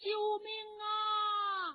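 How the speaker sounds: shrill, very high-pitched crying shout. Reading a woman fighting off an attacker, shouting for help. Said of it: "一边反抗一边大喊".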